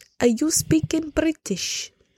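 high, slow, botched French accent.

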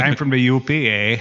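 talking like a Canadian. Speaker showing how to say where they're from, in a Canadian accent. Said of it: "You have to talk like a Canadian".

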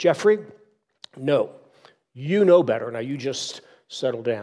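play-acted, firm, stern tone. Storyteller quotes a mother speaking to her little boy, acting out a stern scolding. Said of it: "she said sternly to her little boy".

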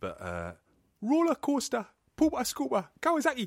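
attempted Geordie accent. Asked to try a Geordie accent, saying a few keywords in attempted Geordie accent. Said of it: "Geordie accent?".

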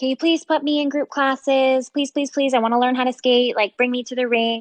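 high, rushed, insistent begging voice. Retelling how a girl begged the speaker's parents for skating classes: imitating her begging. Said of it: "she begged my parents".

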